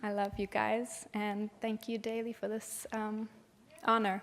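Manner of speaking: shaky, nervous voice. Thanking people by name for this honor: shaky, nervous voice. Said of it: "My voice is so shaky".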